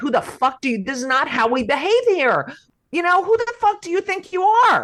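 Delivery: mock all-out screaming, high and climbing. Retelling chasing down a driver on a bike: retelling screaming at a driver. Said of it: "I chased him down and screamed at him".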